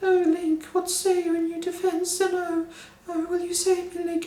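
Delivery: put-on very high-pitched posh British accent. Speaker recalling how Zelda talked in one game: Zelda's British accent. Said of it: "that kind of British accent that no one else seems to have".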